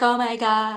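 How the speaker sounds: put-on embarrassed tone. Imitating how mom will react to hearing about smoking: imitating embarrassed mom. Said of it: "so embarrassed".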